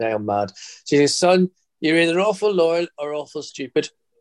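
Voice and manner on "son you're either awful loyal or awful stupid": higher-pitched Belfast voice. A son does his mum's voice as she speaks to him, imitating mum's Belfast accent. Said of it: "I'm doing her voice".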